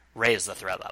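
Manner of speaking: fragile, vulnerable, resigned tone of given-up acceptance. Retelling how the president in the show gives an order: imitating a vulnerable, resigned tone. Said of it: "in a very kind of vulnerable and somewhat resi-, resigned way".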